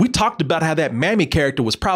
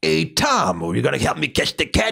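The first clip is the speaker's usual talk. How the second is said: rough, old-timey cartoon cat voice. Discussing a film's voice cast, the speaker quotes a line, Butch voice. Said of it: "he used to talk like a character from that time".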